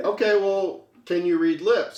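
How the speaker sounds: normal talking voice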